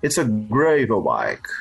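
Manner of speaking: put-on heavy, thick Australian accent, very low and deep-voiced. Retelling a conversation about a bike, quoting a man's answer: thick Australian accent. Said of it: "Aquele sotaque australiano, bem puxado".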